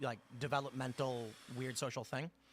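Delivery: ordinary talk, nothing marked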